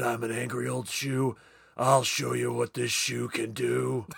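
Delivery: rough growl, gritted out through the teeth. Joking about how someone might react, mimicking him: Clint Eastwood impression. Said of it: "He said".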